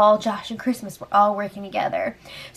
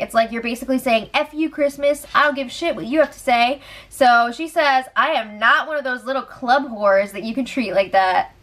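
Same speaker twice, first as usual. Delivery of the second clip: ordinary talk, nothing marked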